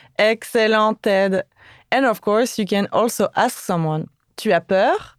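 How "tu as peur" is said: pitch rises upward on the word peur. French lesson, turning a statement into a question: rising intonation on peur. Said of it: "just by using a rising intonation".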